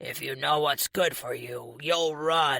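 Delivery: rough, gravelly voice. Reading a villain's threat to the hero aloud: gravelly voice. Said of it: "he says with a gravelly voice".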